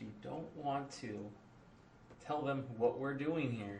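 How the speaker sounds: very hushed, quiet, dropped-down cautious voice. Speaking in character to the party near the cultist camps: lowered voice. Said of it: "I lower my voice".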